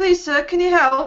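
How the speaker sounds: put-on small, high-pitched child dwarf voice. Role-playing a lost child dwarf asking a stranger for directions, high-pitched child dwarf voice. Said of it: "put a bit of a high pitched voice on and pretend to be a, a child dwarf".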